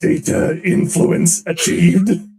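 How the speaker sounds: huge, booming, very loud declaration. Retelling what a character says as the cogitator does its work, in a big booming voice. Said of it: "in a big booming voice he goes".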